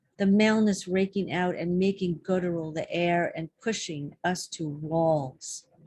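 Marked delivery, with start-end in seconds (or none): none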